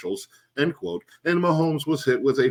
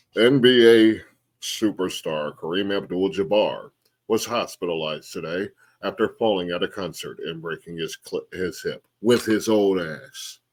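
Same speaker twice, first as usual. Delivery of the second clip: mock somber, solemn newsreader voice, much lower; 5 semitones lower than usual. A host moves on to the next news story, in a mock somber voice. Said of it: "I'm gonna have to get into my somber voice".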